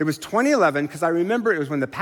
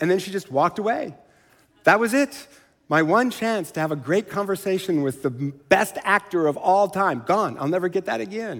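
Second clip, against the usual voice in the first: ordinary delivery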